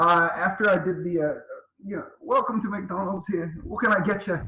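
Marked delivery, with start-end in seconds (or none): 2.2-4.4 put-on Scottish accent. Retelling greeting drive-through customers: imitating his Scottish accent. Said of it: "You can't do accents on".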